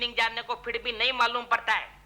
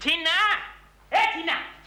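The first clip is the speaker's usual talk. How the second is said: shouting out loud at a much higher pitch; 5 semitones higher than usual. A man calls out to a girl who isn't answering, shouting a name. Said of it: "इतना चिल्ला क्यों रहे हो?".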